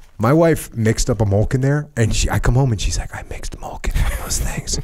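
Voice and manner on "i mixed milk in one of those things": put-on sensual voice, quieter. Speaker telling another person how his wife described the blender: imitating wife's sensual voice. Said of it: "talking like almost in a sensual voice".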